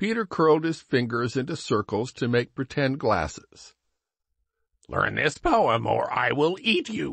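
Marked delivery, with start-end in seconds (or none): 4.9-7.1 playful, growling monster voice, bear-like. Peter, making pretend glasses with his fingers, growls at the others. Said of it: "he growled".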